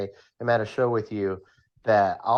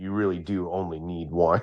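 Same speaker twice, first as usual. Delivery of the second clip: put-on mutter under the breath, lower pitch; 5 semitones lower than usual. Imagining someone sitting in his booth: imitating someone muttering under breath. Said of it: "under his breath, just being like".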